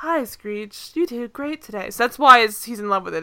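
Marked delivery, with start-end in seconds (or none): 0.0-1.9 talking game or voice-assistant style voice. Imitating a chess game's voice praising its player: Siri-esque voice. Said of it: "Siri-esque voice".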